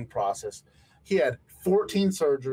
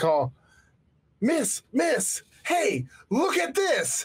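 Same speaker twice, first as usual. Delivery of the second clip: mock bursting excitement, very high, climbing and swooping; 11 semitones higher than usual. Retelling a man calling out to a woman: imitating an overexcited man. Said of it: "he can't contain himself".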